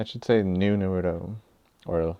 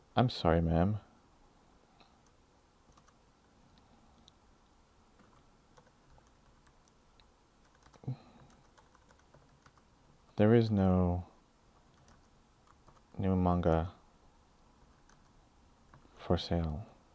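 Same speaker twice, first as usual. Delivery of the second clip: sad, sorrowful, sorry-sounding voice; 4 dB quieter than usual. Voicing a shop owner telling a customer there's nothing new: sad voice. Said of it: "he becomes sad, and you can hear it in his voice".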